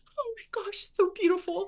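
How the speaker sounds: very high, emotional gushing, acted out. Retelling what a friend said while filming the procedure, imitating someone emotional. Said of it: "she was so emotional".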